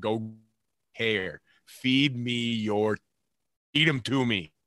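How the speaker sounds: cheer drawn out slowly, like a scream. Retelling cheering as a fan passed the casino: retelling a scream. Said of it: "I'm screaming".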